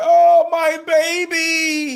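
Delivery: very high, tearful, drawn-out wailing sob. Acting out a man in a zombie movie scene, imitating someone crying. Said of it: "he's crying like".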